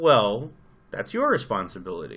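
mock smug, self-satisfied, swooping sing-song. In an argument, acting out what a defendant might say from the box, mock-smug. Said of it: "he can sit there very smugly in the defendant's box and goes".

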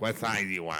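put-on smoker's voice. Recalling a disgruntled teen at the skate rental counter asking for sizes, in a put-on smoker's voice. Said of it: "I already had the smoker's voice".

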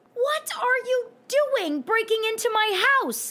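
piercing, shrill, very high-pitched screech. Pinning down the intruder who broke into the house, screeching at him. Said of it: "I screeched".

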